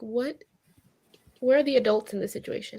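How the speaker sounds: normal talking voice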